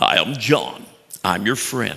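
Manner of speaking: rough put-on voice, still half-finished. Addressing an audience, the speaker tries out a voice he hears: John Maxwell impression. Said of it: "I'm starting to hear John Maxwell's voice".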